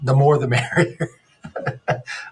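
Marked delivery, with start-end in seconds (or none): 0.0-1.1 sarcastic delivery with a laugh. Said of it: "I am being sarcastic".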